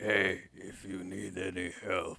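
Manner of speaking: low, very quiet, would-be sinister creepy voice. Retelling another player in the game offering help, in an attempt at a creepy voice. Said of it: "attempt at a creepy voice".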